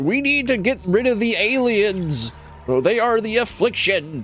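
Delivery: very high, ranting, loud shouting. Mocking the guy on the corner, imitating a shouting man. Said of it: "who's like shouting".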